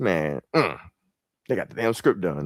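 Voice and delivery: irritated, fed-up, annoyed delivery. Retelling a past reaction to news about a script: imitating own past annoyance. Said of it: "I remember being pissed about that".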